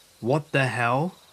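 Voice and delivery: ordinary talk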